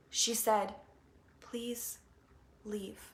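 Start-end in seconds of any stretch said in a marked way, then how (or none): 1.4-3.0 barely audible, very soft whisper. Retelling what an inner voice said: imitating a whispering inner voice. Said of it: "It whispered to me".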